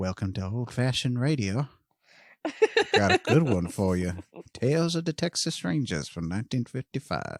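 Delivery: put-on gentle, genial, kindly old man voice. Describing a podcast's host, imitating his intro in a kindly old man voice. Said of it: "sounds like some kindly old man".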